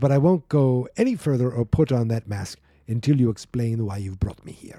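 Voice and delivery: terrible, heavily laid-on fake Russian accent. Reading a scene aloud, voicing one character's reply: bad russian accent. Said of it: "That's a terrible accent".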